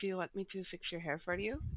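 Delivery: soft, hushed, close half-whisper. Voicing a character leaning over to half-whisper in someone's ear: half-whispering. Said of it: "lean over to Nameless and whisper in her ear".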